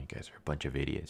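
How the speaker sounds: very quiet mumble under the breath. Retelling a scene where a character insults the group: imitating someone mumbling. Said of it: "She kinda mumbles this".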